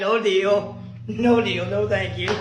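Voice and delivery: ordinary talk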